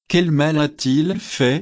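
ordinary delivery

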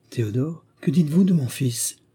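fearful, anxious voice full of dread. Laluc asks Adeline about his son Théodore, fearfully. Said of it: "demanda Laluc avec crainte".

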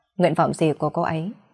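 ordinary delivery

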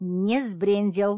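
loud, irritated, grousing grumbling tone. The young witch, brushing off her hands, disputes a claim, grumbling. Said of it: "заворчала ведьмочка".

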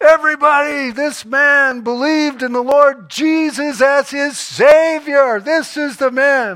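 very loud, very high, slow, drawn-out mocking yell. Retelling how a foreman mocked a convert in the yard: imitating a mocking yell. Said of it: "he yelled out and he said".

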